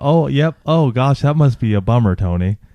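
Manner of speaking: careless, offhand, dismissive tone. Speaker mocks how the other person responds to Tony's troubles: mocking an offhand reply. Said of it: "you have such an offhand approach".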